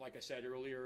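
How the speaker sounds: ordinary talk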